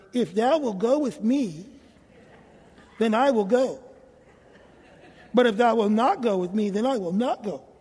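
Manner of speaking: put-on cartoon hound voice. Speaker reads Barak's words to Deborah in a cartoon dog voice. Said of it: "why are you talking like the dog in the cartoons?".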